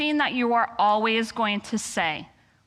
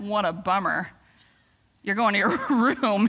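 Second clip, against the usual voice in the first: snide, sarcastic, mocking fake sympathy. Showing how the one-liner should not be said: sarcastic. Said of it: "This cannot be said in sarcasm".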